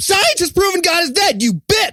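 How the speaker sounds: high, loud, shouted mock scream.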